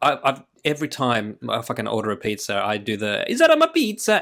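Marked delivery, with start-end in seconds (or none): 3.3-4.2 very high, loud, exaggerated fake Italian accent. Telling others about ordering pizza, showing the voice used, put-on Italian accent. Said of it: "doing it in that voice too".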